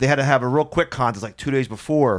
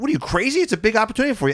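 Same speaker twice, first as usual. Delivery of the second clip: mock yelling with raised pitch; 9 semitones higher than usual. Retelling how two comedians urged a reluctant emcee: imitating someone yelling. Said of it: "Jim Norton and Rich Voss are yelling".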